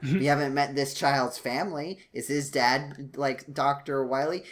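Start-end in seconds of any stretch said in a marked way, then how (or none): none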